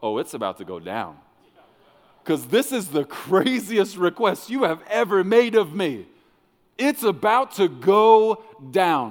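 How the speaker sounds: sly, giggly, loud, swooping sarcastic hype. Showing how to answer God's crazy request instead: giggling with a sarcastic smile. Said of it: "start giggling and get that same sarcastic smile on your face and go".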